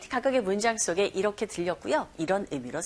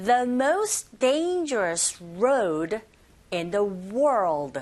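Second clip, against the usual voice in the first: very slow, careful model reading. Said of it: "천천히 하시면 됩니다".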